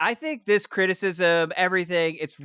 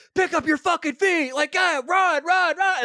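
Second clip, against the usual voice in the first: very high-pitched, badgering yell; 12 semitones higher than usual. Describing footage of one man pushing another to run, imitating someone yelling. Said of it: "Like he is yelling at people".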